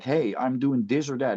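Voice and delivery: ordinary talk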